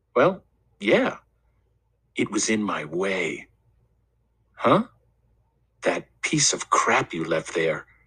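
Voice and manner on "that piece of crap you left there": gentle, soft, sincere, earnest concern, low pitch. Richie answers the narrator's puzzled question: softly and earnestly. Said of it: "Richie said this softly and earnestly".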